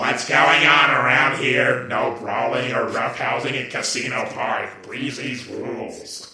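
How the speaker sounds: low, nerdy, geeky-sounding robot voice. Voicing a robot character in their own video, geeky-sounding robot voice. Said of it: "I did the voice of that geeky sounding robot".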